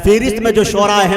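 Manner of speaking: plain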